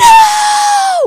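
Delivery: screaming at the top of lungs. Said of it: "I just begin to scream at the top of my lungs".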